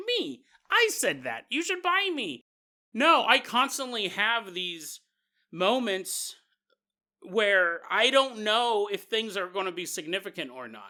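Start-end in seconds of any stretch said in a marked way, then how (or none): 0.1-2.4 very high, swooping, sing-song leprechaun voice. Imagining a store product calling out to be bought: Lucky Charms leprechaun voice. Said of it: "Little leprechaun from Lucky Charms is like".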